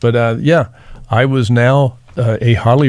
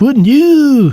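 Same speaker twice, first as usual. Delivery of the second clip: put-on loud high-pitched old voice; 5 dB louder than usual. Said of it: "The old [name] voice".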